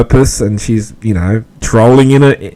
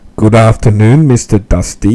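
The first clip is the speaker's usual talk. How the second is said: put-on sexy, seductive voice. Retelling how a caller greets Hansi on his scopes: imitating Blurry's sexy voice. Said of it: "she goes like this".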